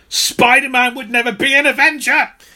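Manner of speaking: very high, loud, forceful yell. Retelling writers in a meeting pounding the table: imitating writers yelling.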